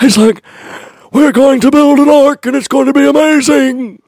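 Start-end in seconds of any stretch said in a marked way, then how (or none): 1.1-3.9 put-on fatherly voice, pitched very high. Speaker quotes a man calling out to the boys, doing a put-on voice for him. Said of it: "I don't know why I'm doing that voice".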